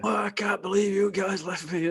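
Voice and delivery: put-on very high, whiny, whingeing Irish accent. Retelling how Mark got back to the hotel complaining, imitating Mark's Irish accent. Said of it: "In his Irish accent".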